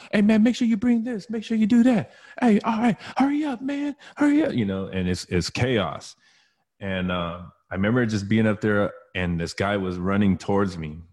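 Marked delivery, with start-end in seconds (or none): 0.1-4.5 very high, shrill, chaotic crowd yelling. Retelling inmates rushing in from the yard: imitating people yelling. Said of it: "everybody's yelling".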